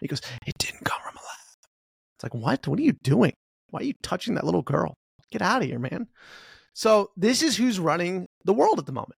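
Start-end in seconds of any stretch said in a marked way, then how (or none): 0.5-1.7 whispered, right up close to the mic. Mock how Joe Biden gets really close to the mic, as a whispering Joe Biden impression. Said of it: "He whispers and he gets really close to the mic".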